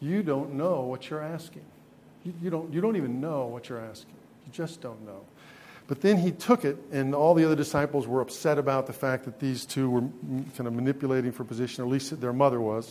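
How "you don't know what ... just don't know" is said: put-on deadpan, quieter. Retelling a reply to a mother asking help for her sons, deadpan. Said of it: "very deadpan kind of response".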